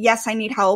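ordinary talk, nothing marked

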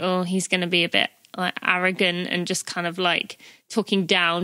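ordinary delivery

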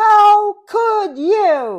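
very high, shrill, very loud yell, long "you". Reading a picture book aloud, a kitty character yelling at a friend: yelling. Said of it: "And then Kitty yells".

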